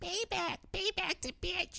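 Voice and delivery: tiny squeaky voice, very high, hushed, creaky. Telling a story of a voice from lobsters in a kitchen tank, squeaky lobster voice. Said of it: "this squeaky voice saying".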